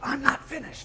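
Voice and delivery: very high, loud scream.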